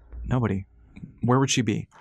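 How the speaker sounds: ordinary delivery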